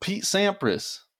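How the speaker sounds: breathy, hushed, whispered Southern American accent. Answering who the famous tennis player is, in a southern accent. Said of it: "I said that in a southern accent".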